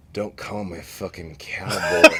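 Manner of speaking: play-acted mournful, downcast, sorrowful delivery. Retelling what a sulking bar patron said: imitating Mike speaking in sorrow. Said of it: "he looks up at me from his drink in sorrow".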